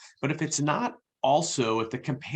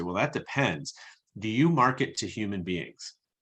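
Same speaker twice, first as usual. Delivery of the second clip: put-on dry, straight-faced, deadpan, slightly sarcastic delivery. Retelling the answer given to people who work for B2B, a slightly sarcastic reply. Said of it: "slightly sarcastic".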